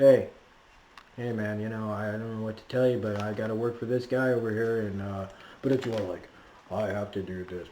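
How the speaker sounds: mock flat, matter-of-fact plain voice, no emphasis. Imitating a cartoon character who sounds just like a guy: imitating a flat, matter-of-fact voice. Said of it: "Just sounds like a guy".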